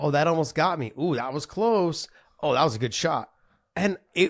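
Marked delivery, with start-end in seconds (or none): none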